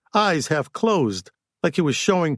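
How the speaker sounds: ordinary delivery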